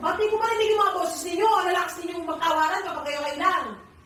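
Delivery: high-pitched, loud scolding shout.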